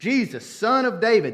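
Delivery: high, loud hollering.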